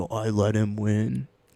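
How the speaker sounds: slow, hushed half-whisper close into the mic. Retelling what someone half-whispered into the mic: imitating someone half-whispering. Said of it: "whispering into the mic".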